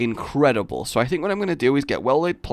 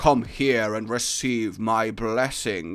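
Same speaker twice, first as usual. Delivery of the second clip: grand, regal, majestic lion voice; 3 semitones lower than usual. Showing the usual way people voice a lion, in a majestic lion voice. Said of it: "people kind of go for a really majestic".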